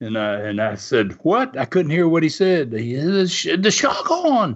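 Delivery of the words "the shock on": put-on Australian accent, much higher, slower. Retelling what an aussie man in the surf shouted at him, australian accent. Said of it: "the Aussies ... that accent".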